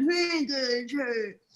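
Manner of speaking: gruff bulldog-style voice. Doing a recurring impression of Blockhead: Blockhead impression, like a bulldog. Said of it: "I keep doing my impression of him".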